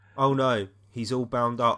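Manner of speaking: flat, put-on monotone. Mocking a character's acting ability, the speaker repeats her line, imitating Trini's deadpan. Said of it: "Just completely deadpan".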